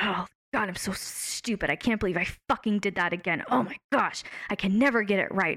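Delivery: mock, harsh, berating, critical tone. Explaining perfectionism, speaker acts out harsh self-criticism. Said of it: "That really harsh, critical self talk".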